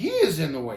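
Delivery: plain reading voice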